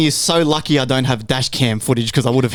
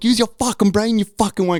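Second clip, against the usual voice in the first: put-on furious rant, pitched up high; 6 semitones higher than usual. Retelling going off at a driver who cut in again: retelling own angry rant.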